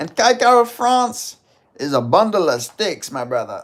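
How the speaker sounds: pumped-up fighter trash talk, screamed, high, drawn-out. Trying an impression of a fighter called Cape. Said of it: "Do cape".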